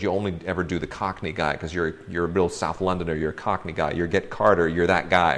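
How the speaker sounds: ordinary talk, nothing marked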